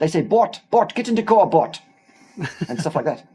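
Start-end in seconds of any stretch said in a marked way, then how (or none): 0.2-1.8 loud, put-on South African accent, called out. Talking about loving the South African accent, mimicking it, in a put-on South African accent. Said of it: "she has a South African accent".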